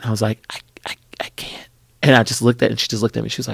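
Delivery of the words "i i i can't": hushed, faltering, slow, barely audible whisper. Retelling answering a castmate before a scene: imitating barely being able to speak. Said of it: "barely can speak".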